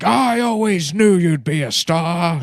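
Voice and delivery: booming, very loud shout. Retelling a dad's reply to his child: imitating the dad. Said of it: "And he's like".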